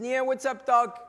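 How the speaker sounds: loud, high-pitched cartoon rabbit voice. Retelling a cartoon scene of the rabbit chewing a carrot: Bugs Bunny voice. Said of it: "And he says".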